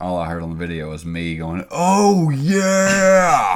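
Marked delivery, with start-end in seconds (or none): 1.7-3.6 very loud, very high booming shout, yeah drawn out. Speaker retelling what he was heard yelling on a video: Kool-Aid Man 'Oh yeah!' shout. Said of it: "Like I sound like the Kool-Aid man".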